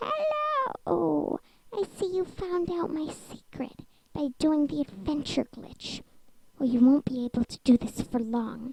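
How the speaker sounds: raspy, ghostly, rasping creature voice. A phantom speaks to the one who found her secret, in a rasping voice. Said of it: "She is from the phantoms! ... Hear her rasping voice".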